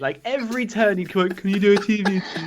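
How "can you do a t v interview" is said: imitated pleading, begging tone, higher. Retelling how another player kept asking for a TV interview: imitating someone begging. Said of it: "spent all day begging me".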